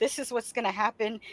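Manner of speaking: dry, textbook-scientific tone. Retelling how father explained periods: imitating a clinical, scientific tone. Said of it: "very, very clinical and scientific".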